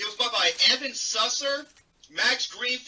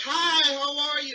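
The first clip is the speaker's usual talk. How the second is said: mock flirty voice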